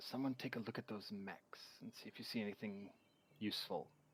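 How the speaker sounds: hushed, very quiet whisper. Voicing a character speaking to the group: whispering quietly. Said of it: "I kind of whisper quietly to the group".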